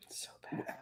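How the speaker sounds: whispering.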